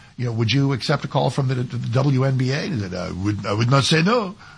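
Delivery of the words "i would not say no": put-on made-up French accent, lower pitch. Quoting a French player asked about a WNBA call, in an invented French accent. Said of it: "I'm inventing the accent".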